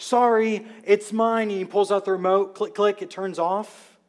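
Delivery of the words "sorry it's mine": acted sheepish, embarrassed, sorry tone, pitched up. Picturing a guy running out to his car alarm, imitating an embarrassed apology. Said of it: "comes running out real embarrassed".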